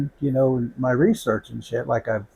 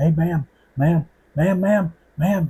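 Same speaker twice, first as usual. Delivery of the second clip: acted-out high excited yelling, over and over; 6 semitones higher, 4 dB louder than usual. Retelling a man in a restroom stopping him: imitating someone yelling. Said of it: "he's yelling at me".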